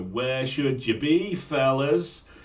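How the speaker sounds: booming, slow, carrying Manx schoolmaster voice. Recalling the school corridor, the speaker imitates the voice that caught pupils, a booming Manx accent. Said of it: "this booming voice would go".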